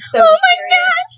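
put-on very high-pitched, shrill, loud girly shriek. Retelling James's reaction to news in a story; imitating James's girly scream. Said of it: "James definitely has a girly scream".

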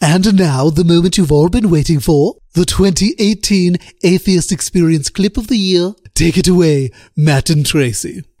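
put-on plummy cartoon toddler voice, announcer-like. Announcing the clip of the year on the show after giving up on the announcer voice, do a Stewie impression. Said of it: "Let me do Stewie".

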